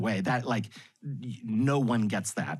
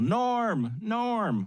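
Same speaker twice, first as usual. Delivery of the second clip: shouting. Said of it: "And they yell".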